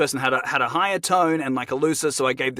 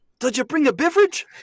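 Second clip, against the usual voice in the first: put-on New Zealand accent, higher pitched; 12 semitones higher than usual. Asked for a short Taika impression, doing Taika's voice. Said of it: "one little short Taika impression".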